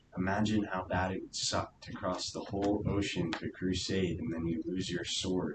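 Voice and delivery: ordinary talk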